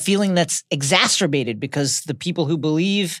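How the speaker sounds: plain reading voice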